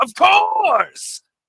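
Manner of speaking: shrill villain cry, very high and very loud. Repeating the earlier in-character yell: Eggman voice. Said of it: "That was Eggman. Going".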